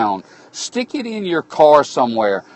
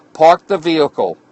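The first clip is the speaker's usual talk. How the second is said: ordinary delivery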